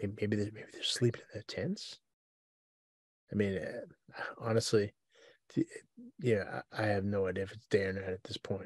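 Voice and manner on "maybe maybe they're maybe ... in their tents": quick whispering. Playing a character, whispering to a companion while exploring a tunnel. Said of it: "I'm gonna whisper to whisper to Chick".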